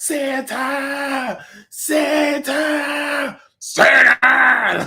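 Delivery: high, rising wailing shout, like crying. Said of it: "when Billy's like".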